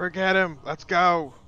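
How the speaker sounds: high-pitched, very loud yell, projected far. Shouting to a fellow adventurer to flee a creature: yelling to a companion. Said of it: "I'm gonna yell out to".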